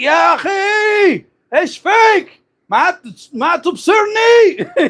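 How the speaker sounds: put-on very high, very slow, shrill, drawn-out old man yell. Retelling how an old man hit by a taxi yelled at it: imitating an old man yelling. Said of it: "you can hear him yelling?".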